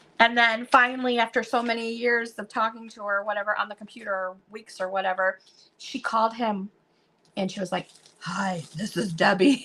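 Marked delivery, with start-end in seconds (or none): 8.2-9.7 really deep, slow woman's voice. Retelling a woman he'd talked to online finally calling him, imitating Debbie's deep voice. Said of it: "she had this really deep voice".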